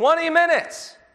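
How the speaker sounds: very high, loud yell. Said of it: "and she yells".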